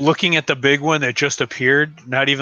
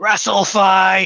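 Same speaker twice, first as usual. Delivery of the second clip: high, loud yelled war cry; 6 semitones higher, 3 dB louder than usual. Declaring a character's action in the game, yelling out a battle cry. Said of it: "like, yell out".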